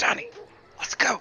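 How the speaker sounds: theatrical, breathy stage whisper loud enough to carry. Calling a slow companion named Donnie to leave: stage whisper. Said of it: "I'm going to stage whisper".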